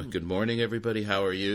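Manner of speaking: bright, happy, smiling voice. Showing how they greet every class on walking in, happy and smiling. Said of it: "I walk into every class happy and smiling".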